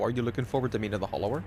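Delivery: rushed quick delivery. Asking someone if they look forward to a game's release, said really fast. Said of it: "I said that really fast".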